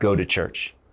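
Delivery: put-on stern voice. Retelling an audible voice heard while praying: imitating a stern command. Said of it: "Super stern".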